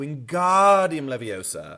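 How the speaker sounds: slow, with strong stress on the ga of wingardium. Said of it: "You have to emphasize the ga".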